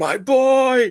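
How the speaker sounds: very high, loud, intense screaming. Recalling a Harry Potter film scene: imitating Cedric Diggory's dad screaming. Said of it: "he's like screaming".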